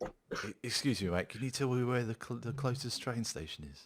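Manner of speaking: bad, poorly done put-on Manchester accent. Imitating an English tourist asking for directions: attempted Manchester accent. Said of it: "I can't do a Manchester accent".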